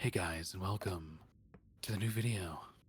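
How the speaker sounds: put-on low vocal fry. Showing how YouTubers they liked when younger talked, vocal fry YouTuber voice. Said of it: "imagine if I talked like that".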